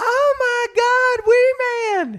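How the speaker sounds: shrill, very high, stretched-out, drawn-out shriek. Retelling a fan spotting the speaker in a parking lot: imitating a woman screaming.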